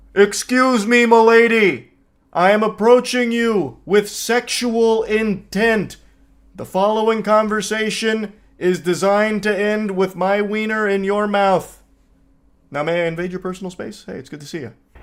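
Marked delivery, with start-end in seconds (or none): 0.1-11.8 put-on mild, high, calling-out yell. Picturing someone screaming a come-on across a bar: imitating someone screaming. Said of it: "just screaming from across the bar".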